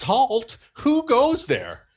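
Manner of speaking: very high, slow, swooping, drawn-out shriek. Narrator voices a towering jester rising from a box, Charlie in the Box shriek. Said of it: "with a high-pitched voice, it shrieks".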